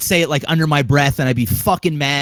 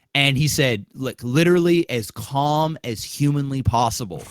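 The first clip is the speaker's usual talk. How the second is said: normal talking voice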